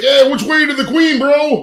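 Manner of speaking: over-the-top American accent, pitched way up, drawn out. Speaker shows how they'll act super American when going over there, over-the-top American accent. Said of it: "I'm gonna act super American".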